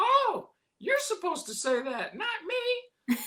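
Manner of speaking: pitch goes way up and swoops slowly. Retelling greeting trick-or-treating kids with candy, in a Mickey Mouse voice. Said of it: "still doing Mickey Mouse".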